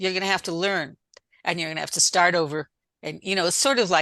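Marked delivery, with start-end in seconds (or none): none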